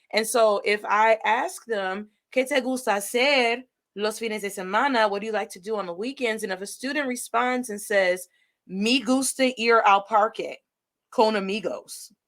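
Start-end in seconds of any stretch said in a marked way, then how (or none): 8.6-12.0 thick, slow, heavy put-on American gringo accent on Spanish. Imitating a student answering a Spanish question, in an American gringo accent. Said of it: "that is an American gringo accent".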